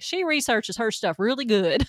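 put-on Southern North Carolina country accent. Retelling what a boyfriend's dad from north carolina said: imitating a north carolina country accent. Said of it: "Maybe I shouldn't not do the accent".

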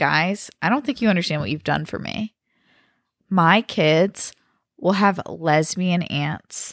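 ordinary delivery

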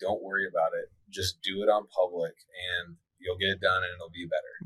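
ordinary talk

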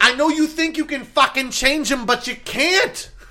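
fake New York accent, pitched very high. Two speakers trying to outdo each other's accents with mock advice, mock new york accent. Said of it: "It was like New York / Boston / Canadian".

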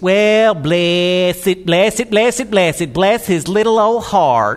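sarcastic, backhanded tone dressed up as kindness. Acting out someone's reply to being hurt: imitating a sarcastic reply. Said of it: "using a Southern colloquialism to be sarcastic".

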